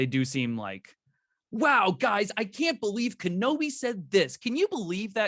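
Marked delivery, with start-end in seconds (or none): 1.5-5.3 fake-excited, over-hyped, pitched-up online reactor voice. Mocking online reactors who don't seem genuine: imitating fake-excited online reactors. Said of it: "that's a very good impression of them".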